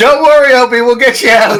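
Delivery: acted full shout, loud and high-pitched. Yelling reassurance in character to a trapped party member: yelling in character. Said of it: "And I'm gonna yell".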